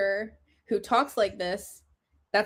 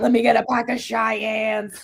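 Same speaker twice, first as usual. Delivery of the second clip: imitated chain-smoking woman voice; 4 dB louder than usual. Describing a long-time character buying cigarettes at a convenience store, small-town chain-smoker voice. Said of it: "she's like small town chain smoker".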